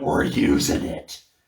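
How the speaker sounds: cackling, crazed madman voice. Recounting Vince's reaction on seeing it: Vince's madman cackle. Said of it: "he cackled like a madman and just went".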